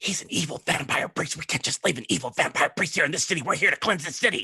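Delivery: loud, too-audible stage whisper. A game character leans over to the player and whispers a little too loudly. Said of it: "She leans over to you and whispers".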